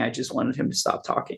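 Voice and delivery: put-on crying voice. Retelling what his mom said crying on the floor, imitating crying. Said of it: "she's crying on the floor saying".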